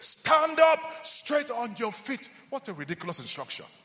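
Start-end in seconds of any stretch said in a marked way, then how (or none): 0.0-2.3 mock, forceful, high, loud shout. Retelling a story, quoting a man's shouted instruction: retelling a loud shout. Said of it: "Paul with a loud voice shouted".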